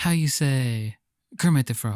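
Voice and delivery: put-on Italian accent. Joking that the other returns from Italy speaking with a put-on Italian accent. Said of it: "a put on Italian accent".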